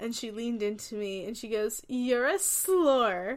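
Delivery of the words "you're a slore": loud put-on drunk voice, "slore" drawn out. Retelling what a very drunk person said at a party: imitating drunk Brooke. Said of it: "Brooke was super drunk at a party".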